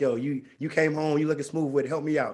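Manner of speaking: ordinary talk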